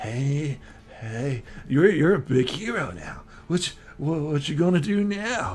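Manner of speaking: put-on tipsy, intoxicated, drunk character voice. Voicing a drunk NPC questioning the hero while eating: drunk character voice. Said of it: "he is intoxicated".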